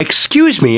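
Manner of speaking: light but stern tone. Shopper whose cart bumped another, getting no reply to an apology: light but stern. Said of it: "I say with a light but stern tone".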